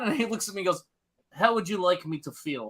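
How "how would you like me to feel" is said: put-on Russian accent. Retelling a comedian's story of a Russian friend's reply, in a Russian accent. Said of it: "a comedian do with a Russian accent".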